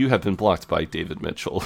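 normal talking voice

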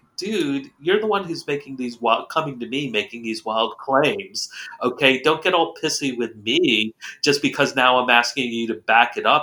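usual speaking voice

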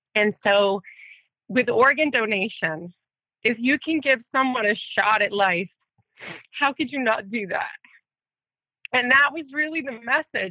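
tearful, bawling, weeping while speaking. A TV personality opening up in conversation, crying. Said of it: "I can't believe I'm bawling my eyes out on you".

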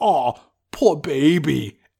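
put-on mocking jeer, with "baby" drawn out. Recounting a movie scene where one character mocks another, retelling a mocking taunt. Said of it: "mocks Sinbad and says".

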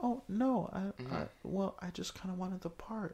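super mild, very quiet, high. Retelling how Nina talks at first in the movie: imitating Nina's super mild voice. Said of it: "she's super mild and she talks like this".

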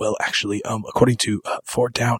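hushed, whispered under the breath. Imitating an actor's line from the movie: imitating Jeffrey Wright whispering. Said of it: "is him whispering".

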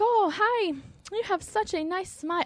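put-on Indian accent, male. Describing an Indian guy from a dating profile: imitating Cleveland Fish's Indian accent. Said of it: "Indian who talk like that".

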